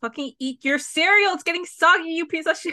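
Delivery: mock screamy, crying, high, tearful half-yelled scolding. Recapping a show episode, the speaker acts out their past self: retelling own screaming. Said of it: "I was screaming and crying because I was like".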